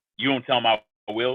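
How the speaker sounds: ordinary talk, nothing marked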